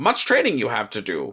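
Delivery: deliberately terrible, deep character voice. Discussing the end of Revenge of the Sith, quoting Yoda in a terrible Yoda voice. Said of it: "that's a terrible Yoda voice".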